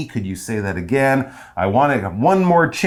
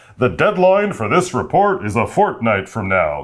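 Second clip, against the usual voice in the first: rich, self-important put-on boss voice; 3 semitones lower than usual. Imagining the boss announcing a report deadline, in an important-sounding boss voice. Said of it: "That's my boss voice".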